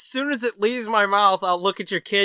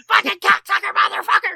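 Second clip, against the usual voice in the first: pretend angry yelling, higher and louder; 12 semitones higher, 4 dB louder than usual. Acting out a hardcore rant while a kid listens: mock screaming curses. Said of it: "a man screaming about cocksuckers".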